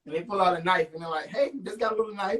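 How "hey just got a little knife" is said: sunny, friendly, cheery service-with-a-smile tone. Describing someone walking into your house with a knife, mock-cheerful, service with a smile. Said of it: "it's service with a smile".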